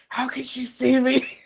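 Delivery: high, theatrical stage whisper aside. Voicing a character trying to lighten the mood, speaking to a companion: stage whisper. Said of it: "stage whispering".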